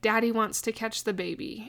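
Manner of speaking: plain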